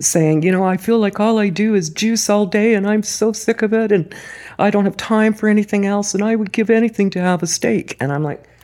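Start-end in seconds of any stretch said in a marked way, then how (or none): 0.4-8.0 mock high, tearful, weepy sobbing. Retelling a woman's phone call, imitating a woman sobbing. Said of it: "she was in tears, sobbing".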